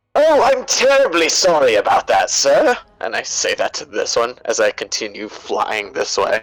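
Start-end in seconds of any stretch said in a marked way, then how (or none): 0.1-2.7 high character voice with swooping pitch. Playing a robot helper apologizing to an enemy: Mister Handy voice. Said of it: "in my best Mister Handy".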